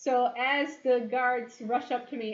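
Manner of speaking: ordinary talk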